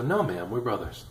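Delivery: play-acted prim, proper, super serious tone. Retelling his answer to a woman's question about his brother, mock-serious, prim and proper. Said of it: "super serious, trying to be all prim and proper".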